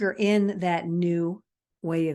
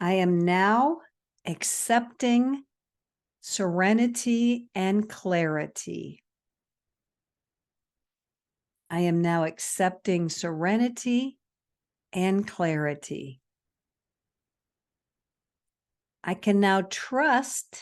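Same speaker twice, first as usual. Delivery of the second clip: slow, read-out delivery. Reading affirmations aloud for listeners to repeat: slow reading. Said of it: "I'm gonna read them slow".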